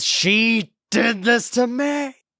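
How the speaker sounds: high, slow accusing shout.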